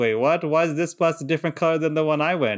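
ordinary talk, nothing marked

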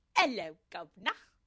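loud, over-the-top Cockney accent, laid on thick. Admitting their accents are bad, demonstrating a full-on cockney accent. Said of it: "I can only do like a full on".

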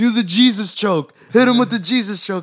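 loud, high screaming. Retelling a fight story, imitating the coach screaming. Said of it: "the coach is screaming the whole time".

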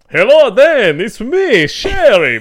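drawn-out vampire drawl, very high and very loud. Imagining the person they discussed sending a recording: imitating Sherry doing a vampire voice. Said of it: "Sherry doing a vampire".

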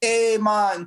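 put-on Jamaican accent. Imitating a friend who would show up with an accent: imitating Phil's Jamaican accent. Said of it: "I bet you that accent straight".

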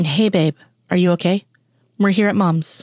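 ordinary delivery

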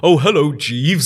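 put-on British accent. Retelling a TV scene where Dan greets someone: Dan's put-on British accent. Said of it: "And starts going to British accent".

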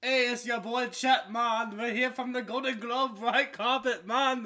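very loud, high, belted-out put-on patois accent. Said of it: "speaking like patois".

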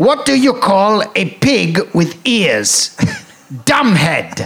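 high, put-on special joke-reading voice. Showing the listener the voice usually used to read jokes out: special joke-reading voice. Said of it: "I usually read them out in a special voice, Which is like this".

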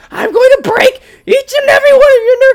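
put-on shrill, very loud, furious angry yell in teen girl voice. Recalling shooting a friend's older sister with Nerf guns, the speaker imitates her getting mad. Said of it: "She'd be like".

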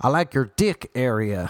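put-on loud, shouted American accent, calling out. Recalling a man who shouted at him leaving the gym, the speaker imitates his American accent. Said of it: "It's my American accent".

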